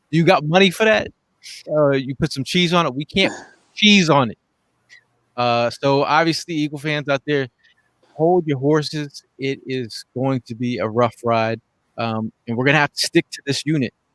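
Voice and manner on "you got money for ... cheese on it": stern fatherly voice, raised pitch.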